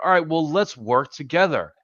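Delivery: high, sarcastic parody voice. Mocking how opponents talk after losing power: mocking imitation of Democrats. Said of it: "the Democrats be like".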